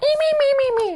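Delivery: very high, squeaky bird puppet voice. Recalling a famous bird puppet, the speaker imitates Orville's high squeaky voice. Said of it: "a big bird with a high squeaky voice".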